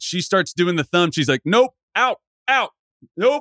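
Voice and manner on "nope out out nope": mock screaming, high and drawn-out. Retelling an older woman ordering players out: imitating a woman screaming. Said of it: "Starts screaming at us".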